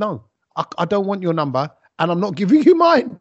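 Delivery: play-acted words broken up by laughter. Retelling own past words to listeners: retelling laughing while talking. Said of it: "I'm laughing as I'm saying it".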